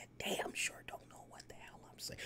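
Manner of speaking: very quiet, breathy whisper, dropped even further down. Showing that even lower speech can't be understood: talking even lower. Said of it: "if I talk even more lower like this".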